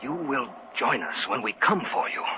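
put-on whisper. Retelling a woman's voice heard aboard a ship: imitating a whisper. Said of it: "a whispering voice saying".

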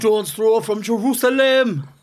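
failed put-on Geordie accent. Trying out an accent you cannot do in front of the others, in a bad geordie accent. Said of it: "That's me trying to be Jordan".

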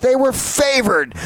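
screaming. Retelling a phone argument with a friend: retelling own screaming. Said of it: "And I'm screaming at him".

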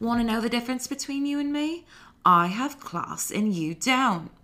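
put-on high-pitched British accent drifting into an Australian accent. Retelling Annie's line to Hallie after a camp fight, Annie's British accent going Australian. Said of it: "sometimes my British accent becomes Australian".

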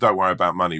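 normal talking voice

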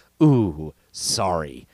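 put-on condescension, sarcastic, fake-sorry. Showing how a game show host could sound: mock condescending tone. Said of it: "condescending thing".

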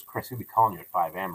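normal talking voice

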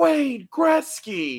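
shrill, very high, swooping scream. Telling how a former guest saw someone at a mall, retelling his scream. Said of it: "he just screamed".

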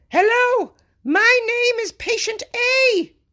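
squeaky put-on voice, very high and very slow. Retelling how someone made a patient's body part talk: put-on voice. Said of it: "Maybe I shouldn't have done the voice there".

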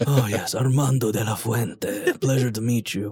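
very deep voice, as low as possible. Introducing the character he plays to the group, in Armando de la Fuente's deep voice. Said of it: "he talks in like a very like deep voice".

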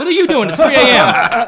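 shocked, high, loud laughing yell.

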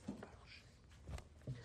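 very soft, hushed whisper under the breath. Showing the class how the line is said: whispering.

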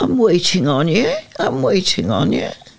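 put-on Glasgow accent. Recalling how a young brother used to talk: imitating a Glasgow accent. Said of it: "He developed quite a Glasgow accent".

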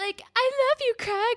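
mock very high, tearful crying voice. Retelling a show scene, Manny speaking to Craig in the hallway, imitating Manny crying. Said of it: "Manny's like crying in the hallway".

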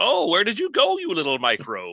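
high, wildly swooping wacky mad scientist voice. Showing which classic scientist voice he means, doing Chris Latta's wacky doctor voice. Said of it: "Chris Latta doing a wacky doctor going".

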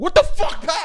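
very high-pitched, shrill, loud yell. Acting out the mean boss yelling at pat: imitating someone yelling. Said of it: "you just yelling at her".

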